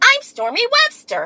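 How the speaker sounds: put-on very high, bright kid voice. Pretending to be a Disney TV star introducing herself: Disney star voice. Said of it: "That's my Disney voice".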